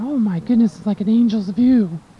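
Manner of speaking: plain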